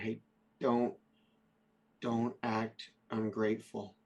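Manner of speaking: slow, hushed, half-whispered aside. Half-whispering in character to another player, telling him not to act ungrateful: half-whispering. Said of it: "I'm gonna whisper to him".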